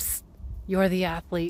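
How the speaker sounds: quiet, hushed, psst-like whisper. Speaker retells what her husband leaned over and whispered, retelling a whisper. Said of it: "he whispers".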